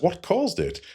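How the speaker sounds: mock mild, calm, unalarmed, very high-pitched. Retelling an episode scene, quoting Kirk: calm Kirk line. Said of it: "Kirk somewhat calmly says".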